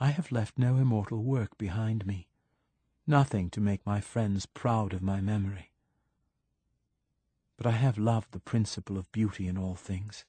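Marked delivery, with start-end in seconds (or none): none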